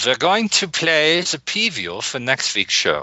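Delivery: put-on German accent. Reading a show announcement again after being asked for a German accent. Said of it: "Can you do it with a German accent?".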